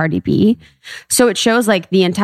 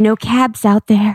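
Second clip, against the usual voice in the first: mock whispering, higher; 3 semitones higher than usual. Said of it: "it's like he's whispering".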